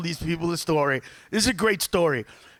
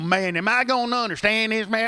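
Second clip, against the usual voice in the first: put-on rural American accent; 4 semitones higher than usual. Speaker imagining someone coming in worried about understanding, in a real redneck accent. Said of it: "come in there with a real redneck accent and go".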